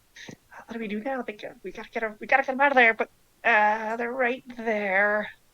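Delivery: high-pitched, squeaky little creature voice. Voicing small creatures jabbering quietly to each other: high-pitched voices. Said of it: "kind of high-pitched voices".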